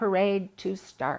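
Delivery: ordinary delivery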